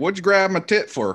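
very strong Southern accent, high-pitched and loud. Remarking that something sounds very Southern, the speaker demonstrates: Southern accent. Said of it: "It sounds very Southern".

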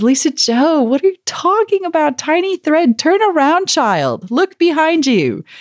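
high, mock voice full of laughter, amused. Voicing God's answer to a complaint: God with laughter in voice. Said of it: "with just laughter in his voice and says".

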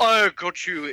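failed, bad fake French accent, still English-sounding. Joking with others about 17th-century france, in a bad french accent. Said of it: "that's not a French accent".

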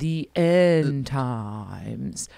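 playful put-on spooky voice, words drawn out. Announcing the series' last doctrine, the end times: mock spooky voice. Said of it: "You could hear it in your voice".

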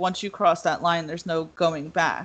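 ordinary talk

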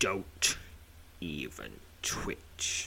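masculine voice in a hissed whisper. A narrator voices a stranger pressing a blade into the listener's spine: hissed. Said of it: "Hisses a vast masculine voice".

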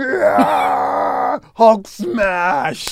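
loud, high-pitched monster roaring. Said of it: "I'm like".

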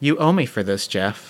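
whispered delivery. Playing a character staring up at a monster, speaking to himself: whispering. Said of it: "and I just whisper".

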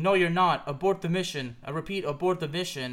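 normal talking voice

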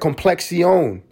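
"complexion" in put-on Spanish accent. Quoting how she said complexion while admiring herself: Spanish accent. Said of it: "She said complexion with a Spanish accent".

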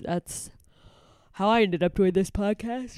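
words spoken through a yawn. Podcast host finishing a spiel for skeptical listeners, yawning. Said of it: "now I'm yawning into the podcast".

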